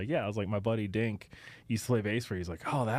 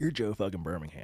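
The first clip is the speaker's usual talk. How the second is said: imitated, put-on Virginia accent; 3 semitones lower than usual. Retelling a buddy's encouraging text: imitating a friend's Virginia accent. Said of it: "I could hear his Virginia accent".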